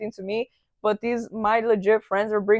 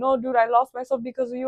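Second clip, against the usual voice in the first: words pushed out through tears, tearful crying; 3 semitones higher than usual. Retelling what he said while crying to her months later: imitating someone crying. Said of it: "I remember him crying to me".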